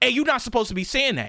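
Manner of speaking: indignant grown man's voice. Retelling a customer scolding him: imitating an angry man. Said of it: "literally like that, like a grown-ass man saying it".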